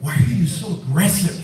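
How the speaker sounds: plain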